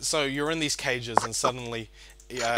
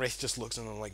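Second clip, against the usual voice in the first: usual speaking voice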